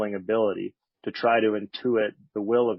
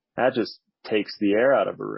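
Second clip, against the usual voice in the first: ordinary talk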